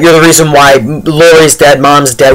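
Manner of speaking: usual speaking voice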